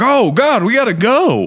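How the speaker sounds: put-on very high, slow old Western movie townsfolk voice. Acting out everyone in an old Western movie tavern reacting: imitating old Western movie townsfolk. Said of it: "everybody would be like".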